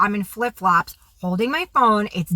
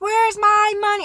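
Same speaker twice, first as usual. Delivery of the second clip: put-on, very high, shrill scream; 11 semitones higher than usual. Recounting grabbing a woman by the hair over money, retelling own screaming. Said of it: "I'm screaming at her".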